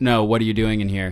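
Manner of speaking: put-on very serious voice. Recounting a man's question on finding the speaker working, retelling a very serious tone. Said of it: "in a very serious tone".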